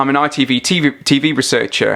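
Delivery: plain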